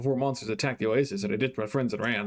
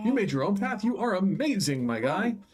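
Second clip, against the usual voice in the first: high, eager, thrilled in-character exclamation; 7 semitones higher than usual. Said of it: "sorry for shouting".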